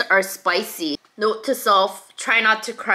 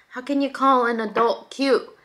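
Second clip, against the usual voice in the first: plain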